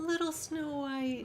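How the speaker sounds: real sweet, tender, high, doting delivery. Imitating how Jordan Peterson reads the story: imitating Jordan Peterson's sweet voice. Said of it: "this real sweet voice for her".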